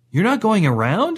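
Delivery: very high, nervous, uneasy. Asking the grandmother, who is driving into an antelope herd, nervously. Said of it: "Cedric asked nervously".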